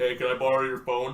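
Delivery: put-on very deep voice, as deep as possible. Retelling a man asking to borrow the speaker's phone, in a very deep voice. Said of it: "asks me in the deepest voice I've ever heard".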